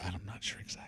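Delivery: hushed, soft, breathy whisper, barely voiced. Chatting with others, the speaker admits uncertainty in a soft whisper. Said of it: "that's why I whispered it".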